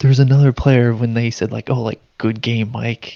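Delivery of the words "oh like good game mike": mock teasing, insincere, sarcastic and jokey. Retelling a player's taunt after a bad game: imitating a sarcastic remark. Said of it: "as a joke or, like, sarcastically".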